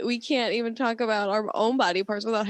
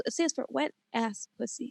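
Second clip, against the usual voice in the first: soft but crisp articulation, quieter; 6 dB quieter than usual. Explaining what an acronym stands for, quiet, crisp enunciation. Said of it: "your volume was not loud on that one".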